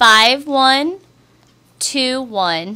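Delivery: talking very slowly. Repeating a street number for a caller who asked for slower talk: talking very slowly. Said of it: "I will talk very slow".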